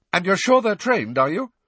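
very high, fast, rattled panicky voice. Malfoy questions the instructor about the creatures in class, panicky voice. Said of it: "the panic in his voice even more pronounced".

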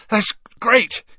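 high, gasped, breathless words. Narrating, Harry answers Mrs. Weasley after swallowing very hot soup, gasping. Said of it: "he gasped".

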